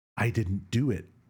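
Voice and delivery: put-on whisper. Retelling a game scene where the suspect denies the murder: imitating Carl whispering. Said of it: "he whispers the".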